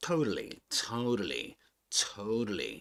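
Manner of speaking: "totally" in American accent, swooping, flapped T. Comparing pronunciations of one word: American English pronunciation. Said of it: "That's in American English".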